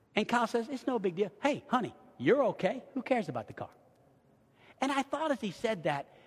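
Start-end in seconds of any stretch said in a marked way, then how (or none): 0.7-3.7 put-on calm, gentle voice. Retelling what Kyle said about the car, imitating Kyle's calm voice. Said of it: "he never raises his voice".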